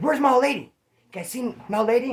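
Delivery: put-on angry demanding tone. Retelling the driver who jumps out after honking at them, imitating an angry man. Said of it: "So he jumps up all mad".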